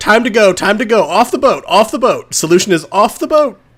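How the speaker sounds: high, urgent, panicked shout. Voicing Charity telling everyone to leave the boat: shouting in character. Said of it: "Charity is gonna shout".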